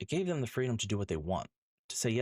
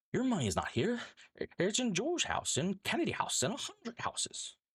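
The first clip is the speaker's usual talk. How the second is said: bad acted voice, very high and swooping; 13 semitones higher than usual. Impersonating a famous scene from It's a Wonderful Life, terrible George Bailey impression. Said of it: "I'm going to do this impersonation".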